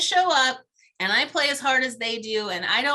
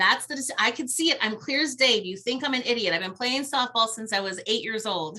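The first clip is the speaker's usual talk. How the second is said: normal talking voice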